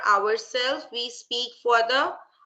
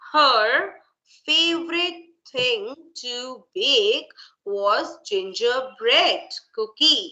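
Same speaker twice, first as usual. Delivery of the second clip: each word said separately and clearly. Teacher reading a passage aloud to show students clear pronunciation: saying each word separately. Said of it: "Let me read from here till here".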